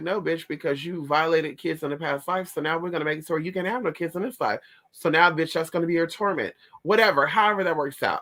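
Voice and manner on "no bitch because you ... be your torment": plain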